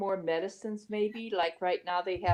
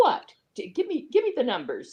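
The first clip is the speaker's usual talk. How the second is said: put-on, very defensive, swooping retort; 4 semitones higher, 4 dB louder than usual. Retelling a store cashier's demand during a talk about masks: imitating a defensive cashier. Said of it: "she was real defensive".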